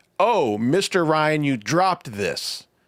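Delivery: put-on, overly obvious, showy announcing tone. Retelling a man covering for a dropped note: imitating someone saying it very loudly. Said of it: "then says very loudly".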